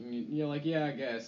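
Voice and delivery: ordinary talk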